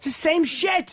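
high-pitched, yelled outburst. Complaining about a radio station repeating the same thing: yelling. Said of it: "Why am I yelling?".

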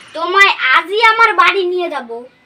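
ordinary talk

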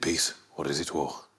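put-on very low, quiet, hushed Brummie accent. After doing Arthur, the speaker shows he can do Tommy too: Tommy impression. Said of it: "because I can do Tommy as well".

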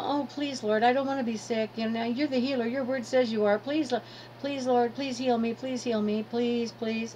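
acted, wheedling, whiny, pleading tone. Describing how people beg the Lord for healing, mocking whiny begging. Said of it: "God doesn't like a whiner".

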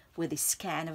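ordinary delivery, nothing marked

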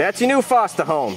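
ordinary talk

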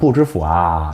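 chiding, reproachful, scolding tone. Chinese lesson, saying 'i don't know' with the final particle: reproachful. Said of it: "뭔가 핀잔 섞인 말투일 때도 많이 쓰는 말이에요. 부질부와. 이렇게".

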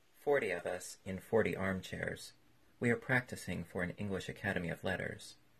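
ordinary delivery

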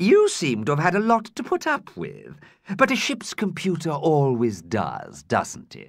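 smooth, silken, silky coaxing flattering voice. Zarella flatters the ship's computer to extract information, in a silky, smooth voice. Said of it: "She was speaking in a silky, smooth voice".

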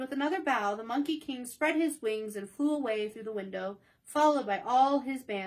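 plain reading voice

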